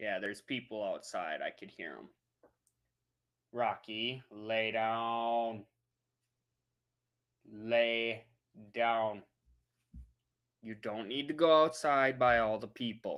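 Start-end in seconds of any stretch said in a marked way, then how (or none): 3.5-9.2 firm, stern, very slow, drawn-out delivery. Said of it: "Don't make me use my stern voice".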